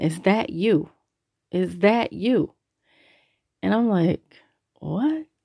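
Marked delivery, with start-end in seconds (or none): 0.0-2.5 mock, drawn-out, slow, mildly excited half-scream. Driving on the highway, the speaker retells the woman with him, imitating her screaming. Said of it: "she starts screaming".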